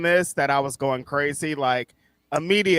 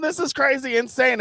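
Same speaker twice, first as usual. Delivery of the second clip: acted yelling, higher pitch; 9 semitones higher than usual. Retelling yelling at the screen during a ladder match: imitating own yelling. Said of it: "I'm yelling at the screen".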